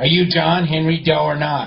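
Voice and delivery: ordinary talk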